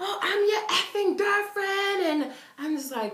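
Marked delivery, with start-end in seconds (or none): 0.0-2.2 very shrill, high, in-your-face confrontational yelling. Retelling how a girl yelled in someone's face: imitating a girl yelling. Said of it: "It was just yelling at Mucho".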